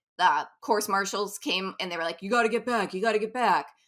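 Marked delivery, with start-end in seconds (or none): 2.2-3.6 put-on New York accent, repeated. Quoting the course marshals at the race, in a new york accent. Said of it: "good New York accent there".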